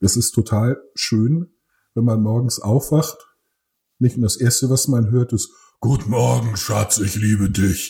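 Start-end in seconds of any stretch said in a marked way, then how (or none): 5.8-7.9 put-on deep, hoarse, sick-sounding voice. Retelling a morning greeting: imitating Katrin's deep cold voice. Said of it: "hat zurzeit eine tiefere Stimme als ich".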